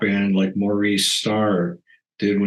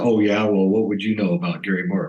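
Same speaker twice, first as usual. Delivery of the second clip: put-on sassy voice. Retelling a comeback to a guitar teacher: imitating own sassy retort. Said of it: "I got all sassy with him one day and I said".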